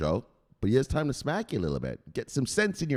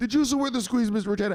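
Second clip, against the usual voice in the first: speaking louder with raised voice; 9 semitones higher than usual. Ordered by Mister Macheda to say it louder, the man repeats it: louder, on command. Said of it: "Say it louder".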